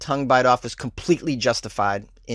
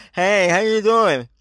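mushy, garbled speech as if tongueless, pitched up; 8 semitones higher, 4 dB louder than usual. Imagining a man who lost his tongue talking, speaking as if tongueless. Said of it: "he's just talking like this".

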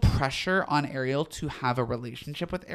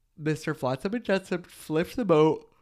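talking through a yawn. Recapping a movie's plot, the speaker yawns mid-sentence: yawning. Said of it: "Sorry, I yawned".

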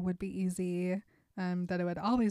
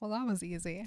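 normal talking voice

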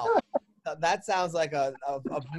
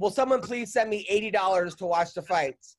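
normal talking voice

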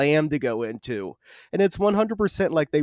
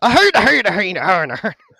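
put-on Scottish accent, higher and louder; 5 semitones higher, 7 dB louder than usual. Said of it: "That was Scotland".

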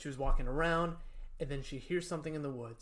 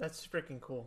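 ordinary talk

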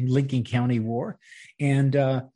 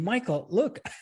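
high, put-on yell. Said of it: "he's yelling at me".

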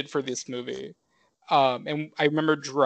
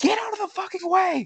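mock very high, shrill, furious screaming rage. Retelling how the mother snapped at girls in a parking lot: imitating mom losing her mind. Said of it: "she fully has her Joker moment".

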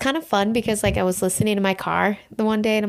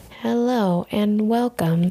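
level, unvaried podcast-host monotone. Mimicking how the podcast's hosts talk the whole time, flat monotone imitation. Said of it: "they're so monotone. And like, this is how they talk the entire time".

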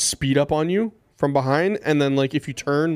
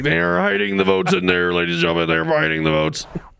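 rough, robotic, ranting delivery; 3 semitones higher than usual. Retell what he said at the voting center as an Alex Jones impression, like a Decepticon. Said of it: "He sounded like a Decepticon".

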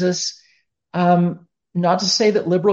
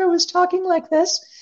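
very high, tiny, squeaky little mouse voice; 12 semitones higher than usual. Speaker demonstrating how their voice used to sound: little mini mouse voice. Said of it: "it was like a little mini mouse voice".

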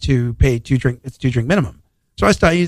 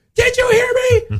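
acted-out scream, higher. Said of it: "screamed at me".

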